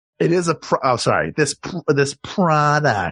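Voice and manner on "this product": heavy air-quote sarcasm, mocking tone. Making fun of a gadget that never worked: mocking tone. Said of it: "That's me making fun of it".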